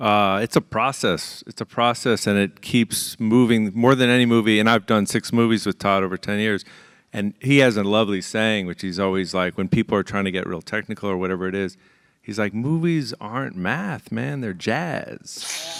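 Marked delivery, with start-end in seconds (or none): 12.5-15.8 very slow voice, each word drawn out. Quoting a collaborator's favorite saying about movies: Big Lebowski voice. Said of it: "He makes me sound like the Big Lebowski".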